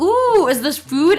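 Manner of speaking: put-on high, slow, curious, wondering baby voice. Acting out a baby finding something it might eat: imitating a baby. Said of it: "they see something and they're just like".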